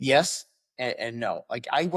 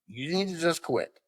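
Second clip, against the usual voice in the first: louder, higher-pitched, raised delivery; 5 semitones higher than usual. Retelling repeating the line on an instructor's order: imitating saying it louder. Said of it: "Tell him again, but louder".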